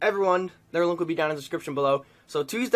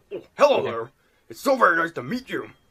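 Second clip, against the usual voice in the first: welcoming professor character voice. Reading a Pokemon game's dialogue aloud to others, in Professor Rowan's voice. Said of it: "I call Professor Rowan's voice".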